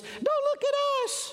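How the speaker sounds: shrill, very high, squeaky tiny creature voice. The speaker imagines tiny protozoans answering his question, in squeaky microscopic protozoan voices. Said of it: "squeak back in their little squeaky microscopic voices".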